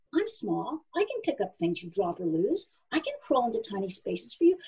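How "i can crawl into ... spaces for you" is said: ordinary delivery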